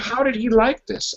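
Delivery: ordinary talk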